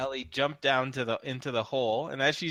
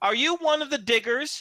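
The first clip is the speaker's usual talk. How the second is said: put-on very high, piercing, horribly shrill old woman voice; 12 semitones higher, 3 dB louder than usual. Narrating a gray-haired woman poking her head out of a hole, horrible shrill voice. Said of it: "this horrible shrill voice".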